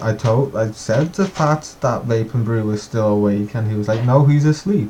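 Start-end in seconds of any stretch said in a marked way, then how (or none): none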